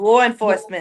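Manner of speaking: "law" pronounced "lawr-en", Boston accent. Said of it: "Yeah, there it is".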